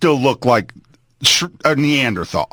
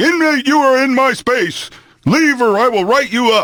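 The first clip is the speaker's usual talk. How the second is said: very high, shrill, bellowed screaming; 10 semitones higher than usual. Retelling a guard warning an inmate about his space: imitating screaming. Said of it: "he would start screaming at me".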